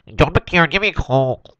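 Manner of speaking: put-on nasal voice. Asked to do a voice, joining in on the call quote; nasal impression voice. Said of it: "gotta go a bit nasal".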